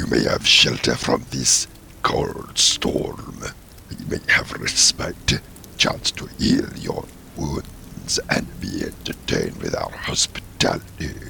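grating, rough, creaky put-on creature voice. Game master voices a creature addressing the players, in a put-on creature voice. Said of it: "That's a very good voice".

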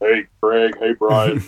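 voice deliberately dropped way down, deep. Host greets the guests, in a lowered voice. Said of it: "I need to lower my voice for something".

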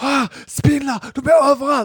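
very high, loud, half-asleep scream. Man retelling how his wife sat up in the night, retelling a sleep scream. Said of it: "Och börjar skrika".

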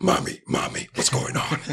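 very high, tiny little puppy voice, calling out. Telling a story, voicing little puppies coming out of a doghouse, deep puppy voice. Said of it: "these little puppies come out with these deep voices".

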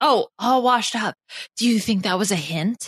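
spoken in a whisper. Asking another player quietly if a remark was a hint: whispering. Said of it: "Are you whispering to her?".

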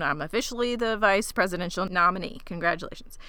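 ordinary talk

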